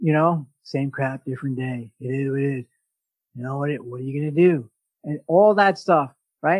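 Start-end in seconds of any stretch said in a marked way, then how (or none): 0.6-4.7 undead monster voice. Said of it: "There's zombie language".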